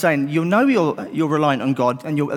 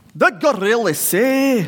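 put-on Glaswegian accent, higher pitch; 8 semitones higher than usual. Telling a Bible story, voicing the devil as a friend suggested: strong Glaswegian. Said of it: "strong Glaswegian".

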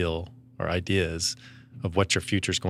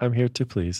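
put-on robotic voice, much higher; 5 semitones higher than usual. Thanked for an assist, the speaker answers the other person in a robot voice. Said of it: "Why are you talking like a robot?".

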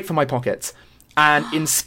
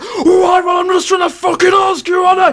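put-on, very high-pitched, mouthy, drunken voice; 6 dB louder than usual. Retelling how the drunk boyfriend snapped back: imitating him turning mouthy. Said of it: "he starts getting proper fucking mouthy".

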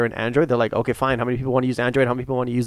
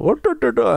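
put-on Indian accent, higher pitch; 11 semitones higher, 3 dB louder than usual. Retelling how a guy mocked an Indian accent: imitating a mocking Indian accent. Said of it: "he started doing it".

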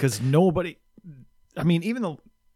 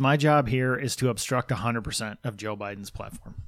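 plain

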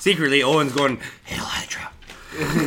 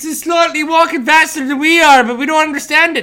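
fake Irish accent, higher and louder; 13 semitones higher, 8 dB louder than usual. Mocking a blurry sighting video: put-on irish accent. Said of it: "Why'd you go Irish?".

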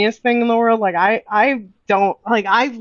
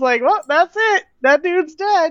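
put-on nonchalant cartoon voice, higher; 7 semitones higher than usual. Recounting a favorite movie scene, quoting a character, imitating Pumbaa's nonchalance. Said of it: "He said it so nonchalantly".

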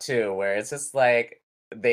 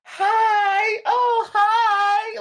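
very high, fake, impersonal, drawn-out delivery; 4 dB louder than usual. Describing how people greet each other, in a very high-pitched greeting. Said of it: "they do that very high pitch".

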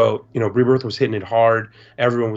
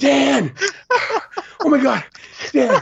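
very high, very slow, drawn-out excited screaming. Retelling how a little boy ran up to Dan: imitating a boy screaming at the top of his lungs. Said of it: "screaming at the top of his lungs".

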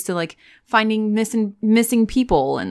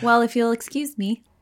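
ordinary talk

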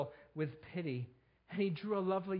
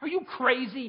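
loud, shrill, scornful, contemptuous sneer; 8 semitones higher, 7 dB louder than usual. One man answers another: sneering. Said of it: "Sneered the other".

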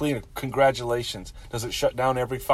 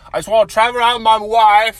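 very loud, high, clumsy fake English accent; 9 semitones higher, 10 dB louder than usual. Trying an accent they call the worst ever: bad put-on English accent. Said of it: "This is the worst accent ever".

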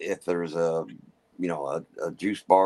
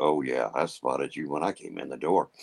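slightly deeper, lower voice with easy delivery; 3 semitones lower than usual. Telling someone you spotted them when you came in, voice dropped a little. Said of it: "that's where you drop the voice a little bit and say".

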